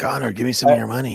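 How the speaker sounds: hushed whisper. Asking Conor for money: whispering. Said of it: "Why is he whispering?".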